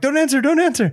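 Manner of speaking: urgent, pleading tone.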